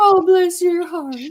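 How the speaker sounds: put-on sweet Southern old lady voice. Showing how the phrase is really said, in a sweet Southern old lady voice. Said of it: "in like a Southern old lady bee kind of way".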